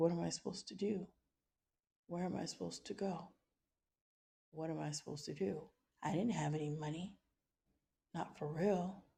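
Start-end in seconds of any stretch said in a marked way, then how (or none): 0.0-5.6 pleading through tears, tearful and desperate. Retelling standing in a dark garage with a newborn: imitating own past crying. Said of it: "And I was just crying, like".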